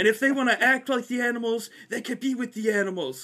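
put-on yelling. Retelling how the wrestling coach yelled in the hallway: imitating someone yelling. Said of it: "he yells".

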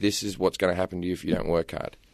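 whispered voice. Retelling a mother's warning whispered during factory visits: imitating a mother's whisper. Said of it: "she'd whisper in your ear".

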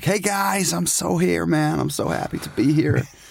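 high, creaky, drawn-out cheesy American drawl. Retelling a rugby player's greeting to the crowd: cheesy American Alex Corbisiero impression. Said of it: "Super cheesy American".

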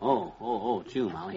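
normal talking voice

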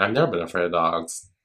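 mock sarcastic tone. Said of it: "I love the sarcasm in your voice".

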